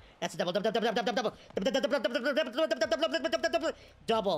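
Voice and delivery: "double" repeated as fast as possible, rattled off. Cheering a runner on to second base, saying double really fast. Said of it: "you say double, like, really, really, really, really fast".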